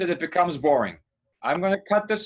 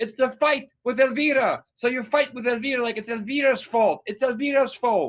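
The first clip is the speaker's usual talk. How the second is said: mild, high-pitched yell; 6 semitones higher than usual. Director coaching an actor through a scene; screaming. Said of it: "I'm screaming".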